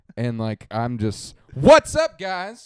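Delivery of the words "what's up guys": high hyped shouting. Showing how different own energy is, greeting viewers: loud hyped MrBeast-style greeting. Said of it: "you just hit the red on that one".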